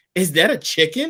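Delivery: put-on furious scolding tone. Speaker retells grandma questioning what someone brought back: retelling grandma's angriest tone. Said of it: "asks in the angriest tone I have ever heard from her".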